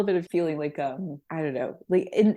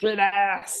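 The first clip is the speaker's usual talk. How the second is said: put-on yelling voice; 2 semitones higher than usual. Acting out the voice heard in a friend's head when swearing, Lyndon B. Johnson yell. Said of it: "I hear Lyndon B. Johnson's voice".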